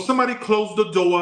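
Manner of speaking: put-on Boston accent, very high pitched. Speaker retells a Boston laundromat worker calling out, imitating a Boston accent. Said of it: "I love the way they talk there".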